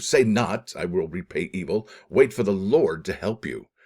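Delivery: normal talking voice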